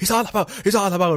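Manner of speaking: frantic, alarmed, high-pitched panicked shouting. Retelling a game chase where someone boarded: imitating screaming. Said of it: "We're all screaming".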